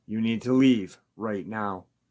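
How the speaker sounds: normal talking voice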